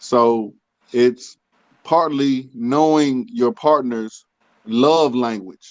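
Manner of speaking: unhurried, careful, slow and deliberate talking. With unreliable audio, the speaker explains love languages, talking slowly. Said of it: "I'm gonna talk slow".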